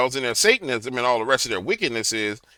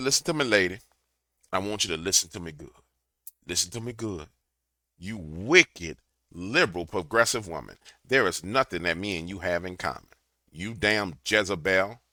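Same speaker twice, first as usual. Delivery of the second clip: mock stern, harsh scolding, hammering each point; 6 semitones lower, 9 dB quieter than usual. Retelling what he said to a woman preaching at him: retelling his own harsh rebuke. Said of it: "And I said it like that".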